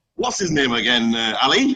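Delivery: plain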